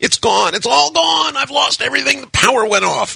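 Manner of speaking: frantic screaming, very high and rough. Narrating Satan searching his computer after the power comes back, screaming frantically.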